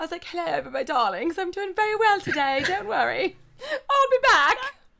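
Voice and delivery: mock prim elderly woman voice. Talking about a favorite recurring bit, the speaker does the lady: imitating a proper old lady. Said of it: "I love that old lady with the glasses".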